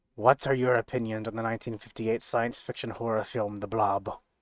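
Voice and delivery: grave, dead-serious tone. A character leans forward closely and asks a question in a very serious tone. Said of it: "in a very serious tone".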